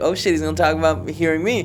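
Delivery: ordinary delivery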